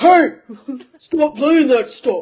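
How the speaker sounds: loud grown-man yell. Mocking a kid whose voice sounds mid-forties: imitating a kid who sounds mid-forties. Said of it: "the voice of whatever kid says this sounds like he is in his mid-forties".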